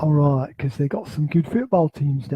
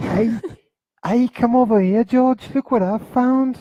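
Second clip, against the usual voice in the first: high, clumsy, bad Liverpool accent with American sound; 8 semitones higher, 4 dB louder than usual. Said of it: "that was the closest they could get to a Liverpool accent".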